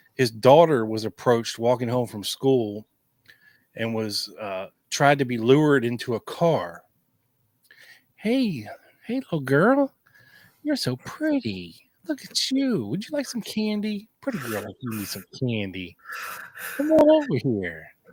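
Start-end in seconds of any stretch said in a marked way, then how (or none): 8.2-17.9 very high, sing-song, creepy coaxing voice. Acting out a stranger luring a girl into a car: creepy stranger luring a child. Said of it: "You do that so well".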